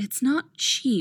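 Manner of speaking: gentle, kindly, tender, easy tone. A woman replies to a man, softly. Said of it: "she says softly".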